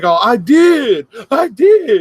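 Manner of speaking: acted gleeful, high rising, very slowly drawn out. Retelling how someone answered the commanding officer: imitating someone happy. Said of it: "and he's like all happy".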